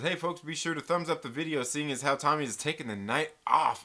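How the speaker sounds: ordinary delivery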